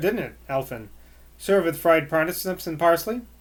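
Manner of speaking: ordinary delivery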